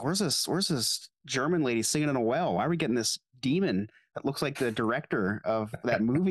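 ordinary talk

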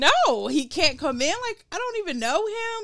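put-on very high, hysterical voice. Retelling refusing to let a stranger in the door, acting out being hysterical. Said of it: "now like i'm like hysterical".

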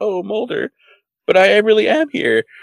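acted, very high, slow, weepy, tearful crying voice. Retelling an episode scene, quoting a character: imitating someone crying. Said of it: "she's, like, crying, like".

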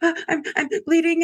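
very high, sobbing through the words. Speaker recounts calling the doctor's office, retelling crying on the phone. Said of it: "like crying".

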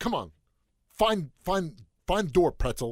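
angry, pissed-off, pushy, firm tone. Retelling how a tv character talks to her dog: imitating an angry tv character. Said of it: "really pissed off and have an argument".

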